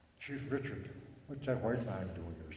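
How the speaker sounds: very soft, hushed, barely there half-whisper. Retelling a question put to a chief in the longhouse: retelling a half-whisper. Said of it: "So I whispered to him".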